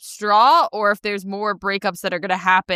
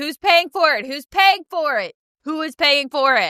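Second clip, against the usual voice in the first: high, insistent screaming of repeated words; 6 semitones higher than usual. Retelling own reaction while watching the show: imitating screaming. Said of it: "I screamed the same thing as well".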